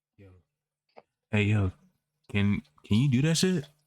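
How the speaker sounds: hushed, quiet whisper. A character in a game whispering to a companion: whispering. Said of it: "I whispered to Avada".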